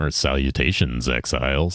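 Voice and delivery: deep, straightforward tone, close into the mic. Describing how Jesus usually greets people on the mic, imitating Jesus's deep voice. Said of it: "Jesus has that like deep, deep voice".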